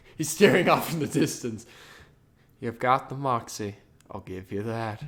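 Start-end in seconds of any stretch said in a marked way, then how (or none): 2.6-5.1 put-on low, creepy old-man voice. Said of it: "Sounds like a creepy old man".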